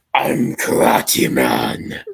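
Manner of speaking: booming, loud, deepest possible voice. Recounting a show, the hero announces who he is in his deepest voice as Karate Man. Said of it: "With the deepest voice the actor can muster".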